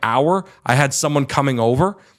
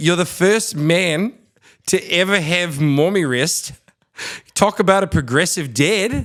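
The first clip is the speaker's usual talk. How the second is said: clumsy, slow, terrible put-on South African accent; 4 semitones higher than usual. Quoting a South African guy who laughed at the speaker, terrible South African accent. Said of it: "it's a terrible accent".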